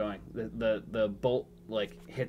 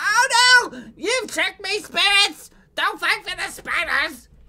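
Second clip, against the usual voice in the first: shrill, very high, very loud panicked goblin voice; 14 dB louder than usual. Voicing a goblin being dragged away by spiders: panicked goblin voice. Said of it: "during that freak out".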